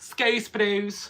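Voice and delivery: loud, high, fake Scottish accent, thrown on. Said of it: "Why am I doing a Scottish accent".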